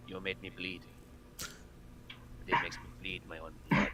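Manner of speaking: very quiet, hushed, breathy near-whisper. Playing a character who looks at the thing, in a very quiet voice. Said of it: "very quietly he just looks at the thing and just goes".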